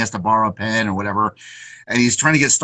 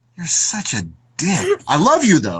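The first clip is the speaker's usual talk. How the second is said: mock near-shout at top of lungs, high, swinging pitch; 6 semitones higher than usual. Retelling what a man told him in front of others, imitating him almost shouting. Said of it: "the top of his lungs".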